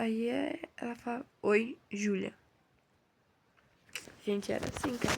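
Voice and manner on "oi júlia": mock dry, curt, cold delivery. Recalling how a woman she greeted answered her, the speaker is imitating a dry greeting. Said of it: "eu seca".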